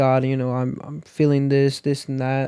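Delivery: ordinary delivery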